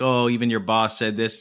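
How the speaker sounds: ordinary talk, nothing marked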